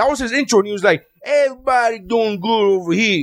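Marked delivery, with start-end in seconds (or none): 1.2-3.2 put-on Italian-American accent. Retelling a comedy contestant's intro: imitating a stereotypical Italian. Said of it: "stereotypical Italian".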